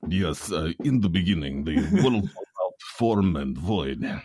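put-on Russian accent. Joking about the real red-letter Bible version, reading it in a Russian accent. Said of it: "the real red letter version is done in a Russian accent".

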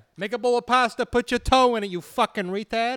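loud, put-on Italian mafioso accent. Joking about having an italian mafioso accent: put-on italian mafioso accent. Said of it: "Italian accent".

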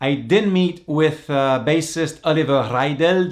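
German-accented delivery. Podcast host introduces a vintage interview with a band's bassist, in a German accent. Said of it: "That was my German accent".

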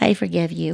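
put-on tiny, itty-bitty small-child voice. Retelling what the kids said at three and four: imitating a little teeny child's voice. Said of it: "this little bitty teeny voice".

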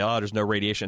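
ordinary talk

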